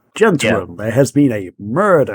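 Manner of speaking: put-on really strong, laid-on Southern American accent. Describing a murder mystery party set in Louisiana: Daniel Craig Southern accent. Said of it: "with basically what Daniel Craig, uh, like, his voice is".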